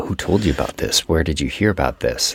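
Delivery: low, dead-serious, grilling tone, acted. Retelling a film scene where a character demands answers: imitating someone getting serious. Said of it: "Amber Tamblyn gets all serious".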